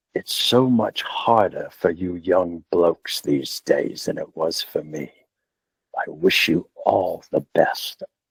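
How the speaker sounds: put-on deep-throated, low English accent. Retelling what a man told him when they met, deep-throated English accent. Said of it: "deep throated English accent".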